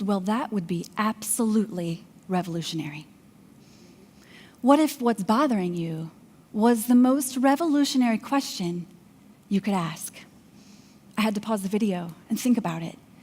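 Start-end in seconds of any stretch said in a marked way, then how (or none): 0.0-3.1 hushed, very quiet, low murmur. Retelling a video, the speaker quotes a man's reply: very quiet voice. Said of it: "in a very uh, quiet voice".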